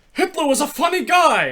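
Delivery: put-on Yiddish-inflected accent, very high and very loud.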